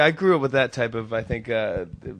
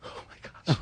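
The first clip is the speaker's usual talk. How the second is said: breathy, tearful crying whisper. Retelling a choking at dinner, quoting mom: imitating someone crying. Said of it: "She's crying, going".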